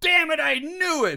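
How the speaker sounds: sudden high, loud outburst.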